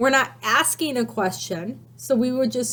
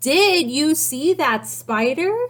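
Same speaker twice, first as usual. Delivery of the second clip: sincere, genuine rising inquiring intonation; 4 semitones higher, 3 dB louder than usual. Reading a sentence aloud to show how a question sounds, in an asking voice. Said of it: "We're using an asking voice".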